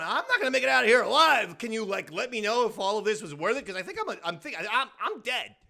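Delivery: terrified, desperate, scared-to-death pleading tone. Retelling a scene where a scared lady pleads with Cassian Andor: imitating someone scared to death. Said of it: "she's scared to death".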